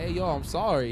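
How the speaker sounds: put-on desperate, pleading, apologetic begging. Retelling a video of a man stopped by police: imitating someone begging. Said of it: "he was begging".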